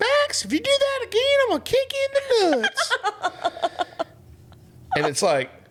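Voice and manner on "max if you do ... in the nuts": very high-pitched woman's voice. Retelling what a lady said after a leg kick, imitating her voice. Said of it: "I gotta do the voice".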